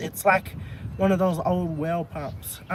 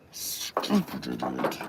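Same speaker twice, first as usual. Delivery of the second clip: put-on sinister evil villain voice; 4 dB quieter than usual. Struggling with a bolt that won't turn, cursing at it: evil voice. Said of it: "now it's making me use my evil voice".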